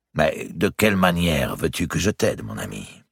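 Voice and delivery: plain reading voice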